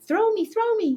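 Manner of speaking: very high, funny, squeaky gremlin creature voice. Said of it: "a funny high-pitched voice".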